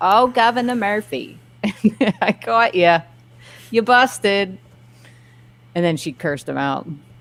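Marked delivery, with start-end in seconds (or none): 0.0-4.6 put-on New Jersey accent, high and slow. Retelling how a woman caught the governor eating out without masks; jersey accent. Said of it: "this woman with a Jersey accent just go".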